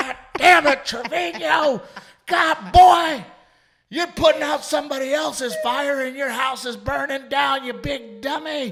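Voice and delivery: very high, very loud hollering. Recalling how his high school coaches yelled at him, imitating a yelling coach. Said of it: "Like just yelling at me".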